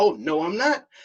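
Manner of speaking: sarcastic, taunting, snide tone. Mocking how the other speaker hints at something: imitating the other speaker. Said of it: "you go back and like".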